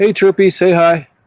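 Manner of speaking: loud, high-pitched call.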